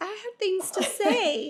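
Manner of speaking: dog voice, high and slow.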